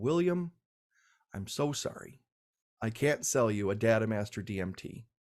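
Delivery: low, hushed voice under the breath. Quoting a seller's reply to the speaker's order, retelling in a hushed voice. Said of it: "John said in a hushed voice".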